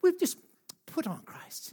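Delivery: hushed, breathy, pious church-lady whisper. Coaching listeners to repeat a phrase, the speaker demonstrates a church lady voice. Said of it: "it's like church lady kind of thing".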